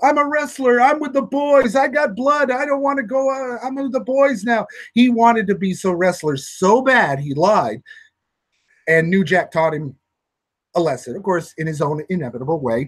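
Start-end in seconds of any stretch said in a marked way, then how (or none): 0.0-4.7 acted, high-pitched screaming. Retelling what the hurt kid screamed while carried out: imitating a kid screaming. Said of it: "he's screaming".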